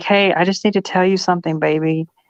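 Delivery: sweet, little, put-on girly feminine voice. Speaker acts out a hypothetical woman speaking to a man, nice little feminine voice. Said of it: "in this nice little feminine voice".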